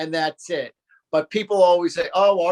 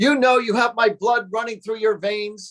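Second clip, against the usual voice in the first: acted-out, toned-down, furious, angry yelling rant; 5 semitones higher than usual. Retelling how the father yelled on arriving at the house: imitating father yelling. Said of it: "he's yelling at the top of his lungs and he goes".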